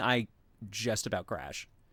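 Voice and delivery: ordinary talk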